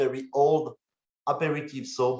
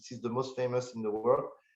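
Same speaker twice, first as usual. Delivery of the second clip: ordinary talk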